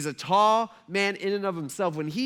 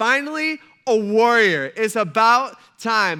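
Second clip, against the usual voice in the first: very loud, fired-up, pumped-up excited cheer; 4 semitones higher, 9 dB louder than usual. Retelling how Saul calls David in, pumped for a warrior; imitating an excited Saul. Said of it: "He is pumped".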